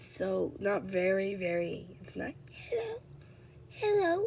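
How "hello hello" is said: very high-pitched, filter-like put-on voice. Showing off a sick, high-pitched voice, put-on high-pitched voice. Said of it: "when I do my high pitch voice and my freaking sick voice".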